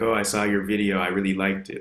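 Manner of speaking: mock sarcastic tone of voice. Retelling a passive-aggressive stranger's praise of the video: imitating a sarcastic tone. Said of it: "trying to be sarcastic".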